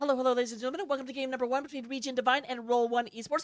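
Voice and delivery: speaking very quickly, rapid-fire. An esports caster opening game one of a match, talking really fast. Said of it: "I'm talking really fast".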